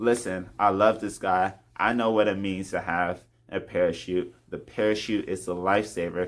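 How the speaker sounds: ordinary talk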